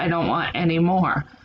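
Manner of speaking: ordinary talk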